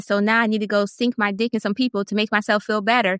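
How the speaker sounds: plain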